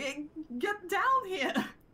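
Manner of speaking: impatient, high-pitched calling voice. In a tabletop game, Colin calls up to Oliver on the ladder, impatient call.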